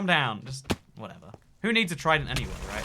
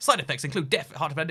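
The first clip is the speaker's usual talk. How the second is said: breakneck, very fast rapid-fire rattled-off delivery. Mimicking how medication ads list side effects: rattled off very fast. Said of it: "they say it in the fastest voice".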